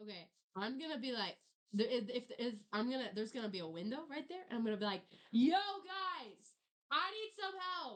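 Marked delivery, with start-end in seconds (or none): 5.3-8.0 very high, slow, drawn-out shout. Playing a character at a window, addressing the group: shouting. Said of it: "are you shouting this right now?".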